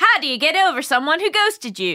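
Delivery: put-on Scottish accent. Reading an anonymous email from Scotland aloud, in a put-on Scottish accent. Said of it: "I shall be reading this email with a Scottish accent".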